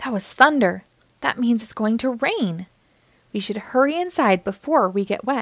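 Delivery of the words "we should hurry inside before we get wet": ordinary delivery, nothing marked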